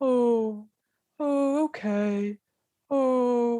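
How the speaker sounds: mournful creature voice, sad and very slow. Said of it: "the sadness in the horn beast voice".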